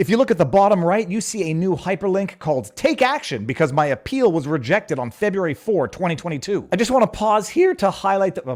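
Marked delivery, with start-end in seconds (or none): 6.7-8.5 voice cracks, going much higher. Speaker addressing viewers of their channel, voice cracking. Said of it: "my voice just cracked".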